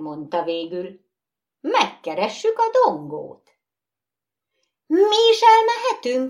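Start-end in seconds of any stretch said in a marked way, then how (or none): 4.9-6.3 eager, excited, very high-pitched voice. Nine skittle dolls speak all at once, asking excitedly. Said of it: "Kérdezték izgatottan".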